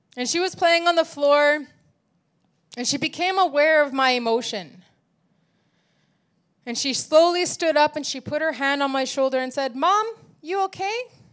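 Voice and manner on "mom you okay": put-on high-pitched little child voice. A mother retells what her daughter said to her, imitating her child's high-pitched voice. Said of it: "I'm trying to imitate her high-pitched voice".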